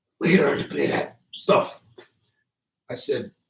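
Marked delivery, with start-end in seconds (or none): 0.2-1.8 put-on raspy whispering voice. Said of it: "if I can remember his raspy voice".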